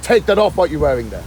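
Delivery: ordinary delivery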